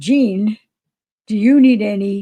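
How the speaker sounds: play-acted, drawn-out yelling at the top of lungs. Recounting how William shouted the question while the five watched, retelling a full-lungs shout. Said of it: "shouted at the top of his lungs".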